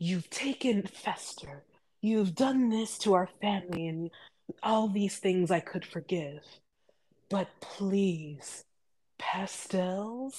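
very soft, hushed, haunting, very quiet voice. Speaker quotes a woman's line, imitating her hushed voice. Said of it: "It was always a hushed voice".

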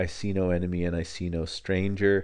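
ordinary talk

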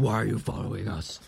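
put-on hero voice, rough, creaky and rasped. Confronting someone shoved against a wall by the collar, in a Batman voice. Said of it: "In my best Batman voice".

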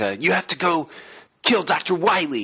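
overwrought, hammy voice, slow and swooping. Imitating Zero's lines to Mega Man in a 90s anime dub; overwrought Zero anime-dub voice. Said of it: "it's just super overwrought".

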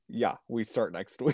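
put-on bone-dry, unenthused, no excitement at all. Retelling the volunteer call from Georgina: imitating a dry, flat tone. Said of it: "so dry".

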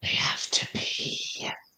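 soft breathy whisper. Playing a character who leans in and tells another: whispering in character. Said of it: "and whisper".

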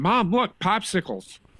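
put-on voice of a small child. Imagining a five-year-old kid seeing this: imitating a five-year-old kid. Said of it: "a five-year-old kid seeing this and then going".

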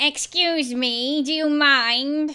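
loud, strange, odd, weird creature voice. Game master voices a voice the players suddenly hear, in a weird voice. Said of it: "you suddenly hear a weird voice".

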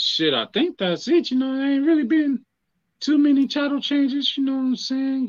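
very high, rising, thinking-aloud voice. Asked by a friend for another title change, he thinks aloud in a high-pitched thinking voice. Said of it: "Why your voice get so high".

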